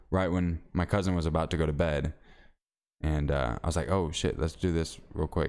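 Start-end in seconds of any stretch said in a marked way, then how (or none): none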